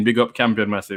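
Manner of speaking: ordinary talk, nothing marked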